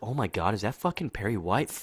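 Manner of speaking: gushing, starstruck, excited outburst. Recapping a show scene, voicing a character's reaction to a guest: mock-fangirling excitement. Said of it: "Lois is also fangirling a bit".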